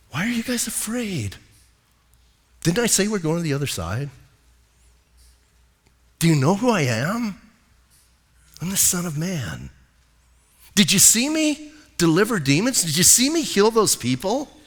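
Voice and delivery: mock easygoing, unruffled, calm talk. Retelling a story of him woken on the rocking boat, acting out calm speech. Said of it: "and he's just like calm".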